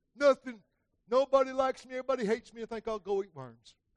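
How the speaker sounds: pouty, self-pitying, whiny, sulky whine. Speaker on Isaiah 12:3, acting out pouting.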